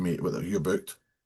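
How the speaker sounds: plain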